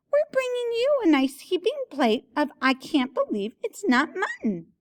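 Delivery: very high, sing-song, swooping disguised put-on voice. Narrating a character's line spoken in disguise, in a high-pitched voice. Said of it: "in a high-pitched voice".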